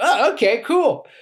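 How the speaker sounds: carefree, breezy, clueless, happy-go-lucky cheerfulness. Retelling the reaction when the music was shut down mid-act, acting happy-go-lucky and oblivious. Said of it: "happy go like guy doesn't know what's going".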